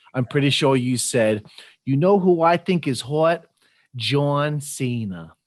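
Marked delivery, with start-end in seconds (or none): 1.8-5.2 slow, bad New York Italian American accent. Quoting the guest's past remark back to them, bad New York Italian American accent. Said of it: "I apologize for my bad New York Italian American accent here".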